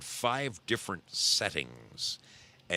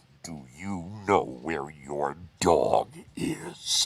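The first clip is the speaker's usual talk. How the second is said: put-on creepy voice, slow and raised pitch; 2 semitones lower, 5 dB louder than usual. Retelling what the speaker used to say to a woman, put-on creepy voice. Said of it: "I would say in the creepy voice".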